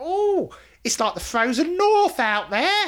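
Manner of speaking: shrill, very high, loud put-on woman's voice. Recalling a woman's remark, imitating her voice. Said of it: "With that voice. ... totally that voice. Exactly that voice. I am nothing if not a great mimic".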